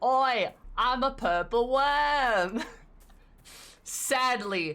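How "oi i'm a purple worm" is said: very slow, loud, drawn-out put-on Australian accent. Retelling a running gag about a purple worm spirit, in an Australian accent. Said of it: "he had an Australian accent".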